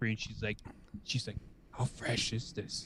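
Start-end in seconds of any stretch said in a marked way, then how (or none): 1.7-2.9 quiet, hushed stage whisper. Retelling what the lady at the hospital asked her, imitating a whisper. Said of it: "the lady was just whispering".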